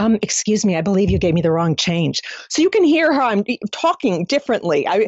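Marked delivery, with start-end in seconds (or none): 0.0-2.2 put-on quiet confidence, much lower pitch. Speaker retells asking a store clerk about wrong change, putting on Kathy's quiet confidence. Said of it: "I'd put on Kathy's voice".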